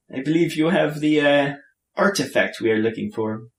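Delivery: put-on Norwegian-accented English. A stranger standing beside the players' table speaks, in a norwegian accent. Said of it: "he actually has a, uh, a uh, Norwegian accent".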